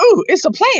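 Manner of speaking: very high, all-excited exclamation. Retelling how Yoga reacted to the plant: imitating Yoga getting excited. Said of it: "Yoga got all excited. He's like".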